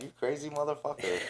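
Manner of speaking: soft, amused exclamation spoken through laughter. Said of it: "looking at him laughing like".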